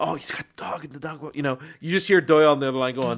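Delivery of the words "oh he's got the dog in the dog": imitated whisper, higher and quieter. Retelling a film character's phone call at the end: imitating a whisper. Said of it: "whenever he's whispering".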